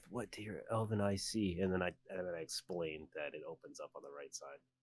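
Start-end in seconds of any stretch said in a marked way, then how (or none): 0.1-1.6 slow, soft, hushed half-whisper under the breath. Speaking in character while looking down a tunnel: half-whispering under breath. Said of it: "whisper under my breath".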